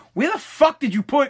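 put-on yelling. Retelling yelling at someone from the kitchen: retelling own yell. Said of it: "and I yelled it".

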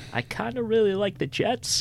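very high, frightened, terrified voice. Betting preview, admitting he likes the jets, in a terrified voice. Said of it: "In my most terrified voice".

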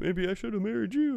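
put-on very high, insincere joking tone. Imitating Bill's line on a phone call: imitating Bill's fake jokey tone. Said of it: "fake, like, jokey sounding Bill".

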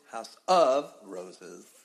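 heavy emphasis leaning hard on the word "of". Show intro naming the house of roses: stress on of. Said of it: "I put the emphasis on of".

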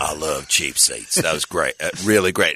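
very deep, low big man's voice. Retelling what a tall fan said when he came over: deep voice imitation. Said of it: "deep, deep voice".

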